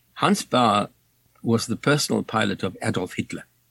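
normal talking voice

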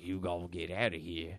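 put-on, laid-on Australian accent. Retelling a movie scene, quoting an old man in a Crocodile Dundee accent. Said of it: "that was Crocodile and Crocodile Dun-, Crocodile Dundee".

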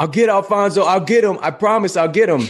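frantic, agitated yelling, pitched very high. Retelling lying on a hospital stretcher after an injury: retelling a yell. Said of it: "And I was just yelling".

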